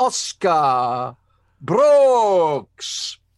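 loud, put-on regal announcer voice, one word drawn out. Reading out a listener's full name as requested: mock regal announcement. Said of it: "read it out, all regal and that".

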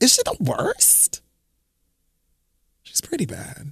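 soft, high, unvoiced whisper.

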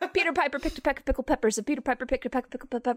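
very fast, rapid-fire, rattled-off tongue twister. A teacher shows off a tongue twister: very fast tongue twister. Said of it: "I say it so fast in class".

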